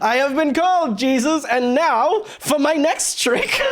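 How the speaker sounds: swooping, high, grand stage-magician showman voice. Redoing their own earlier remark on purpose, in a stage magician voice. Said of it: "like a magician".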